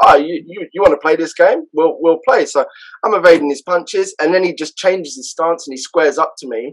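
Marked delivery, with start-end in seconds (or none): none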